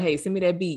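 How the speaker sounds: usual speaking voice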